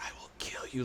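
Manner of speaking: hoarse whisper. A game master voicing a figure whispering in a player's mind, hoarse whisper. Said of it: "like a whisper in your head".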